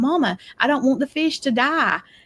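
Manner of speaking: put-on high, panicked, fretting little boy's voice. Retelling a son upset about a dying fish: imitating a panicked child. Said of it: "my son was having a panic".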